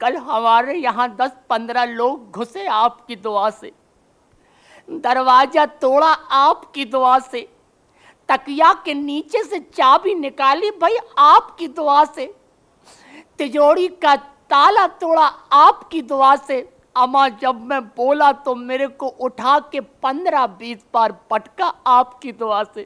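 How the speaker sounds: put-on weepy, tearful voice through sobs. Retelling what a man said through tears, imitating someone crying. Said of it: "روتے ہوئے بولتے ہیں".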